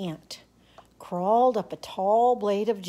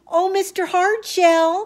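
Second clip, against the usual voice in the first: high, tiny ant voice, calling out; 10 semitones higher, 8 dB louder than usual. A stranded ant calls out to a passing mud turtle, in a wee small voice. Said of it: "called the ant in his wee small voice".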